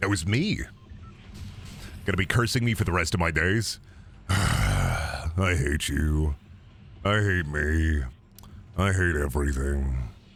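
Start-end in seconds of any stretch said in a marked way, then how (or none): 4.3-10.1 very deep, very slow, drawn-out crawling voice. Cast member repeating a line they voiced last episode: Terraria skeleton voice. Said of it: "that's the Terraria skeleton voice".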